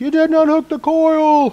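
high-pitched, loud screaming. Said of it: "probably screaming at me".

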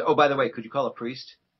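ordinary delivery

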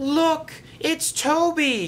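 very high cry, one word drawn out. Narrator reads a stranded character spotting the rescuing engine: crying out. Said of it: "cried Flora".

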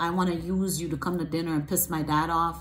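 plain

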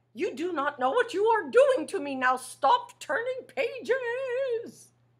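very high puppet voice, word pages drawn out. Reading a picture book aloud to a listener turning its pages, Grover voice. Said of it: "Can you make a Grover voice like that?".

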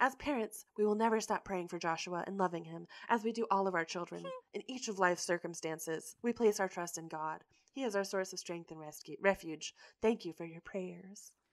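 quiet mock-dramatic read. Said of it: "I'll do a dramatic reading".

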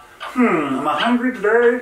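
put-on froggy puppet voice. Explaining a reflex with no brain activity, the speaker voices the thought in a Kermit the Frog voice. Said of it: "my best Kermit the Frog voice".

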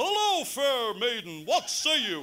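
loud, drawn-out, slow declaiming in a kingly voice. Retelling how Henry VIII films change the way dad speaks to mom: dad's Henry VIII voice. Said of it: "he'd be in Henry VIII mood".

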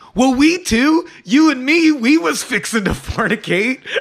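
loud, high-pitched belted-out delivery. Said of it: "Delmer loudly goes".

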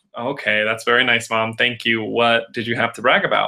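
ordinary talk

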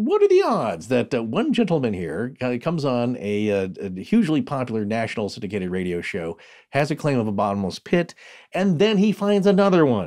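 ordinary talk, nothing marked

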